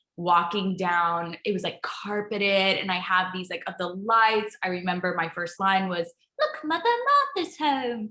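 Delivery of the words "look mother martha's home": put-on light cockney accent, very high pitch. Performer recalling their first line in a theater-in-the-round show, in a little cockney accent. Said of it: "in a little cockney accent".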